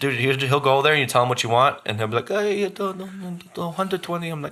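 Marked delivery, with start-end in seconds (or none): 2.3-4.3 soft, pitched-up put-on Mexican accent. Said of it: "He cuts the accent".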